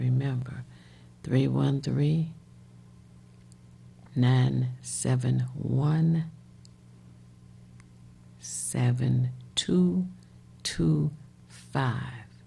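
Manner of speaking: very slow, deliberate, digit-by-digit number reading. Giving a transportation phone number so people can write it down, saying it slowly. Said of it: "I was trying to say that slowly".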